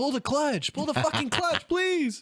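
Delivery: put-on, shrill, very high, desperate pleading scream. Retelling how another person screamed at a rider as he dropped it, retelling a scream. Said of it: "Brooklyn's screaming".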